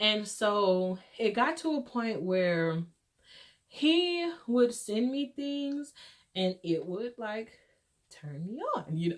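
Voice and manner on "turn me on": sudden drop into a hushed half-whisper. Describing how the pictures someone sent made the speaker feel: half-whispering. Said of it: "I don't know why I just whispered that".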